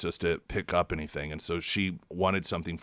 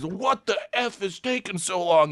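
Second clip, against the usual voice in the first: sudden, pitched-up, mock fed-up yell; 12 semitones higher, 5 dB louder than usual. Retelling a fed-up customer's outburst in a slow line: imitating someone yelling. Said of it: "he would yell".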